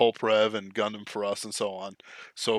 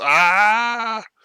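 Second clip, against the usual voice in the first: long, drawn-out, very high, shrill scream; 11 semitones higher, 7 dB louder than usual. Retelling how someone showed the way Aquilonians scream, imitating a scream. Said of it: "Aquilonians scream like this".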